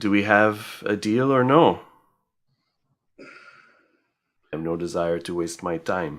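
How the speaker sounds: put-on half-hearted, borderline French accent. Voicing a character pressing for a deal, borderline French accent. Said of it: "given that borderline French accent I was pulling".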